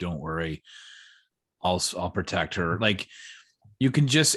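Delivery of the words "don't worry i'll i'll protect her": deep, quiet, low, reserved, held-back voice. Praising an actor's performance, imitating Renner's deep, quiet, reserved voice. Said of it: "his voice gets really deep and and um like quiet and reserved".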